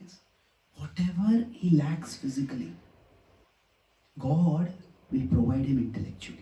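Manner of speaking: confident, calm, clear voice. Retelling what a mother told a consoling visitor, in her calm, clear voice. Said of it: "calm, clear, confident voice".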